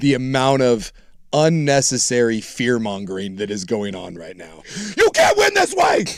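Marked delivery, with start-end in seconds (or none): 5.0-6.0 play-acted, very high, loud, wound-up excited shout. Replaying own earlier yell from a clip: re-enacting own excited yell. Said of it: "you can hear you winding up for that".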